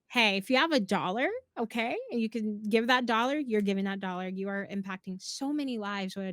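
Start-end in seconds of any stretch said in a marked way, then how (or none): none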